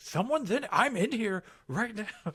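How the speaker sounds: very high, slow, drawn-out yell, acted. Retelling someone forcing the bathroom door handle: imitating own yelling. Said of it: "I just start yelling".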